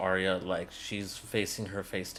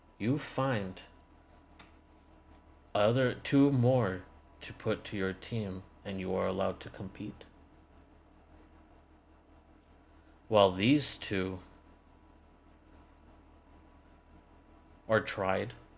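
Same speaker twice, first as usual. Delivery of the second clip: grave, weighty, much more serious tone. Narrator voicing a woman laying out the team's choice: much more serious tone. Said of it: "In a much more serious tone".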